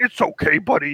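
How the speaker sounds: put-on puppet-like character voice. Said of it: "Sounds like a Muppet".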